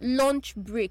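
lunch break said slowly with heavy stress.

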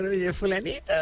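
ordinary talk

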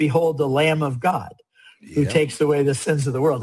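plain

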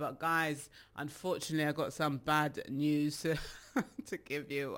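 speaking through laughter. Addressing the audience before sharing sad family news, laughing while speaking. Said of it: "I don't know why I'm laughing".

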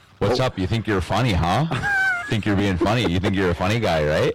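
put-on Canadian accent, swooping and taunting. Retelling a run-in over Sharks jerseys, the speaker puts on a taunting Canadian accent. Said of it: "the Canadian accent is actually more taunting".

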